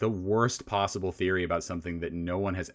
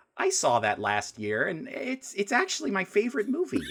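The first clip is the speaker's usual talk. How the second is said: very high, swooping, sing-song suburban mom voice; 13 semitones higher than usual. Asked who to recommend the movie to, imitating a random suburban wine mom voice. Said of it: "I don't know why I did that voice".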